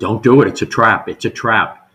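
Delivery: very loud, urgent, repeated yelling. Recounting what they kept yelling at people walking in, retelling own yelling. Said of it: "And I kept yelling".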